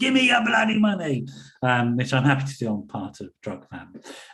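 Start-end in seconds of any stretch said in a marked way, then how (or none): 0.0-1.3 very high-pitched, demanding voice. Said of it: "That's my [name] moment".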